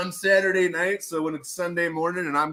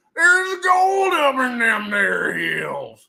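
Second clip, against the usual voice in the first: put-on old prospector voice, much higher, slower; 7 semitones higher, 5 dB louder than usual. Host remarking on talking like an old prospector, then doing it; old prospector voice. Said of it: "I'm talking like an old prospector".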